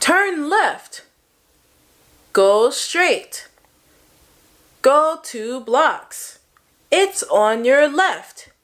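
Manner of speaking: deliberate, every word clear. Showing how to talk to students when giving directions: slow, very clear speech. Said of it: "It's slower, it's clearer".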